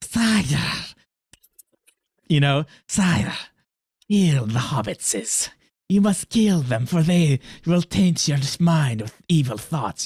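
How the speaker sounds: hissing, snake-like, sinister voice. Describing the evil advisor to the king in Lord of the Rings: snake voice of evil advisor. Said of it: "It has a snake voice".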